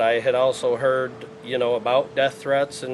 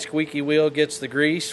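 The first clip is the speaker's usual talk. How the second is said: usual speaking voice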